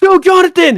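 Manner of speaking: loud, high-pitched calling out.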